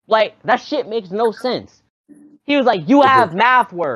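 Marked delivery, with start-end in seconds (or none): 2.9-3.9 loud yelling across the room. Retelling what a teacher screamed from across the room: imitating screaming. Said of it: "He screamed that out".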